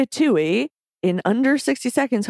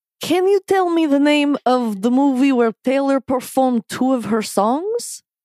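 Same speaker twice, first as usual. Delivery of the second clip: put-on heavy Eastern European accent, quiz-host style; 3 semitones higher than usual. Reading a quiz question aloud in the style of the quiz, strong Eastern European accent. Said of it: "the strongest Eastern European accent".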